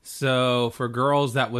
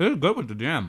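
speaking while chewing, mouth full; 3 semitones higher than usual. Eating mid-conversation, talking with mouth full. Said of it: "Say that again without your mouth full".

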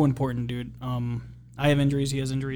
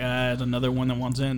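plain

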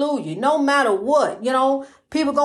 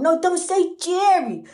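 put-on slow baby talk, talking down to a baby's level; 4 semitones higher than usual. Speaker retelling what she always told the baby: baby talk. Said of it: "like in baby talk".

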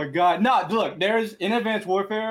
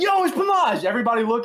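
play-acted, toned-down high mild scream; 5 semitones higher than usual. Speaker retells screaming at the MLG shop to get out with a hoodie; retelling a scream. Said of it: "So I screamed it".

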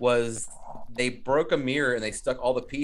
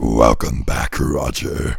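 very low, deep, loud, rough demon growl; 13 semitones lower, 7 dB louder than usual. Urged on by the others, the speaker does Angela's demon voice. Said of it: "You're the best at that".

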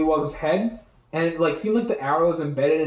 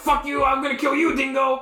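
high, furious, angry yell; 8 semitones higher than usual. Narrating a fight where Trevor yells back at the Grung, Trevor yelling angrily. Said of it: "he yells back".

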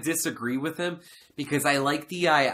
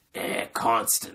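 raspy, rough voice rasped from the throat; 4 semitones lower than usual. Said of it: "with his raspy [name], [name] voice".

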